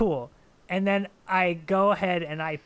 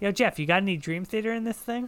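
put-on puppet-like voice, higher pitch; 3 semitones higher than usual. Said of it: "I just turn to him like a Muppet".

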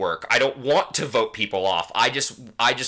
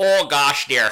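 put-on Wisconsin accent, said louder; 4 semitones higher, 5 dB louder than usual. Hosts praising a favorite on this season, Sue's thick Wisconsin accent. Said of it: "the thick Wisconsin accent".

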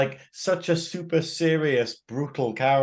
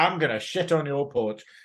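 plain

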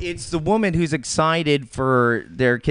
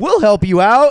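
sassy ad spokeswoman delivery, raised and high; 8 semitones higher, 6 dB louder than usual. Imitating the spokeswoman in a Walmart commercial: imitating a sassy Walmart spokeswoman. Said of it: "That's a great impression".

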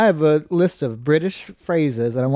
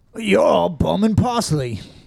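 careful, deliberate put-on British accent; 4 semitones higher than usual. Saying a quote for the other person to guess its meaning, in a british accent. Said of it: "I'm going to say the quote in a perfect British accent".

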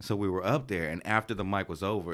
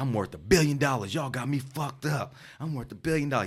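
intoxicated, drugged-up boasting rant, pitched high; 5 semitones higher than usual. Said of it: "like he's clearly on some type of drugs".

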